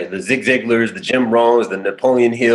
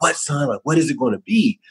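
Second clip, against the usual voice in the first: mock keen, curious, fatherly, excited, eager tone; 4 semitones higher, 3 dB quieter than usual. Retelling telling a father about a life plan, imitating an excited dad. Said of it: "And my dad's excited".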